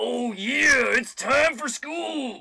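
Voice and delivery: high, slow, drawn-out screaming. Retelling how dad woke him for school, screaming like Macho Man. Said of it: "screaming like Macho Man".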